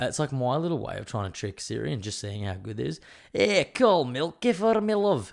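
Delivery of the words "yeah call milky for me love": fake Scottish accent, very high, slow. Showing how they talk to Siri to throw it off, put-on Scottish accent. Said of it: "I try to put on like a Scottish accent".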